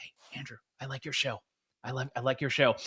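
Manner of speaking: low, very quiet, under-the-breath half-whisper. Retelling a federal bureaucrat greeting the speaker on the street, imitating a low half-whisper. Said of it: "say in a really low voice".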